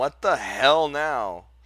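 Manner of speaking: startled, slow, loud yell.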